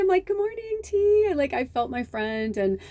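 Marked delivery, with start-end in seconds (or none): 0.3-1.3 very high-pitched, very excited voice. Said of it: "I was so excited".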